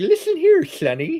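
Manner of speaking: whistling lisp through every s, very high and squeaky. Imitating the beaver from Lady and the Tramp talking to the dog: whistle lisp. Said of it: "a whistle lisp".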